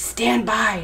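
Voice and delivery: hushed voice. Monkey warns Meerkat that Chameleon is coming; hushed. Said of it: "hushed Monkey".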